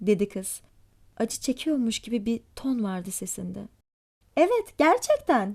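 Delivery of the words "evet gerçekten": raised, louder voice. Rosemary answers the girl's question about her invitation: raising her voice. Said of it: "dedi Rosemary sesini yükselterek".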